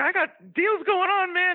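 very high, slow, drawn-out squeaky voice. Retelling how he acted as an executive: Jimmy Hart impression. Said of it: "your Jimmy Hart sounds like Mickey Mouse".

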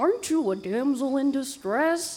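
odd cartoon strongman hero voice. Retelling the funniest meme of the week; Hercules voice. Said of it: "Why does he talk like this?".

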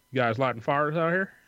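put-on broad, very twangy Southern accent, laid on thick. Imitating some dude coming out to ask a question, twangiest Southern accent. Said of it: "just the twangiest southern accent".

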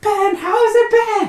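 shouting. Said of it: "you do not need to shout".

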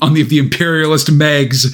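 ordinary talk

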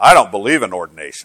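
smug, self-satisfied, superior little tone. Retelling what someone said about ordination: imitating a smug remark. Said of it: "kind of smugly said".

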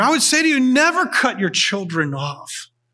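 earnest, feeling-filled, emotional delivery with swooping pitch. Addressing listeners during a talk, getting a little bit emotional. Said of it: "I'm getting a little bit emotional here".

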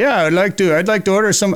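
bad put-on Finnish accent. Retelling a phone call from a guy in Finland ordering jigs, bad Finnish accent. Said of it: "Not sure that's Finnish".

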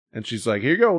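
ordinary talk

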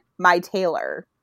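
put-on, curt, dismissive two words. Retelling an interviewer's question and the curt answer: imitating Hugh Grant being dismissive. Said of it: "He gave her the most shut down".

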